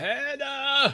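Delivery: put-on elderly man screaming. Narrating a scene as an old man calls out a name, old man screaming out. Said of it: "an old man's voice, like kind of screaming out".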